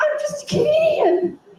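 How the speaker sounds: freaked out, very high and very slow. Retelling a raid when guns came in: retelling own freaked-out panic. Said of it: "And I, like, totally freaked out".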